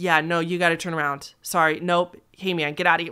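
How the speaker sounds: ordinary talk, nothing marked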